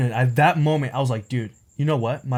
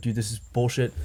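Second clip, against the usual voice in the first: put-on very angry tone, quieter; 3 semitones lower, 5 dB quieter than usual. Retelling his reaction to making the coffee again: imitating himself super pissed off. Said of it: "super pissed off that morning".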